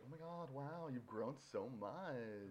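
mock flirtatious voice. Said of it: "Probably some flirtatious".

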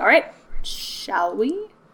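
big character voice with mouth stretched wide. Voicing a character who gestures to the group: talking with mouth wide open. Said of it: "His voice is hard 'cause it's just my mouth, but big".

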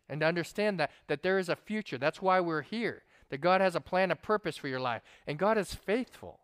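ordinary delivery, nothing marked

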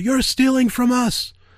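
very high, shrill scream. Retelling a movie line where Steve Jobs screams at Microsoft: imitating Steve Jobs screaming. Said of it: "screams out".

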